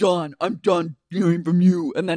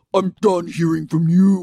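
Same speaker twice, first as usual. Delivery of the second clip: put-on low-pitched voice, spoken louder; 4 dB louder than usual. Retelling an argument, say Katie's line imitating her lower octave. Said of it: "Her lower octave came again".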